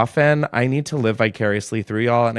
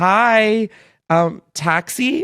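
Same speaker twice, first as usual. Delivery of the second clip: very high put-on bimbo voice, drawn-out "hi"; 9 semitones higher than usual. Retelling going up to the taxi line, speaking in a put-on bimbo voice. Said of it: "In my like fucking most bimbo voice".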